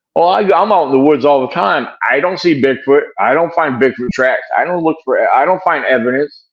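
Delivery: ordinary delivery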